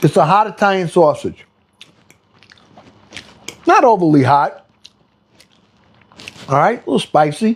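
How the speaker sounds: speaking with a full mouth, chewing. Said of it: "I talk with my food in my mouth".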